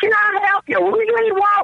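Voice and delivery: very high, shrill put-on Southern accent. Retelling what a bar worker asked on arrival: imitating a Southern accent. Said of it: "With a fucking accent and shit".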